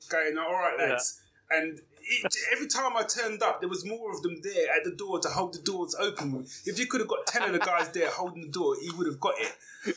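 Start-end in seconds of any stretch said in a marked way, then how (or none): 0.4-1.2 put-on East London Cockney accent. Retelling greeting the door staff in New York: Cockney accent. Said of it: "a Cockney accent".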